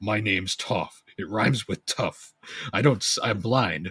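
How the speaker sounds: burly, slow, deliberate voice. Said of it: "big burly beefy man and he's like".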